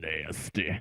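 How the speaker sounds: very deep and raspy voice. Retelling a remark heard from the girls' bathroom: imitating a deep raspy voice. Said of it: "It was deep. It was raspy".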